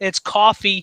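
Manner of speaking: put-on Staten Island accent. Speaker demonstrates how a word sounds in a Staten Island accent. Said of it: "you got to bring that Staten Island accent".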